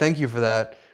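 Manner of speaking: sarcastic tone. Retelling what a friend said on the phone: imitating sarcastic thanks. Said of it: "but he's being sarcastic".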